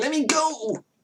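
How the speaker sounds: put-on very high-pitched, aged old man voice. Voicing a grappled child who wants to be let go: seventy-year-old man voice. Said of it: "Why does he sound like a seventy-year-old man?".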